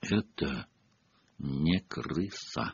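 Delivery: very low, very quiet mutter through clenched teeth. Answering a question about a pet rat, speaking through gritted teeth. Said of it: "процедил сквозь зубы Сириус Блэк".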